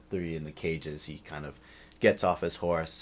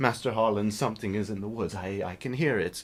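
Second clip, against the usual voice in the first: very shy, timid, meek voice; 4 semitones higher than usual. An orc speaks up to master harlan in a very timid voice. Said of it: "which it's kind of the opposite of what you'd expect to hear from an orc. / he says in a very timid voice, which it's kind of the opposite of what you'd expect to hear from an orc. / He stops and stan".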